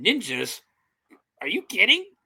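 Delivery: play-acted incredulous, doubtful are-you-serious tone. Retelling a film scene where the colonel hears of ninjas: imitating the colonel's disbelief. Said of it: "he didn't wanna believe".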